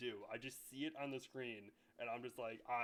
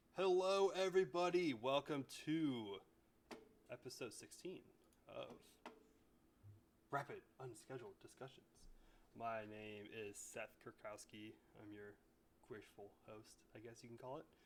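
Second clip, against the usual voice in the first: speaking really softly. Host opens his podcast episode, speaking really quiet. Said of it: "I'm speaking really quiet, like it's A S M R".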